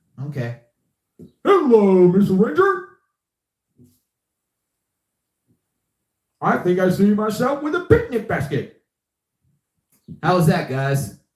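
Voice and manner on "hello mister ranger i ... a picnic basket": jolly, high, swooping cartoon bear character voice. Streamer doing cartoon impressions for viewers: Yogi Bear voice. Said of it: "That was Yogi Bear that I just did".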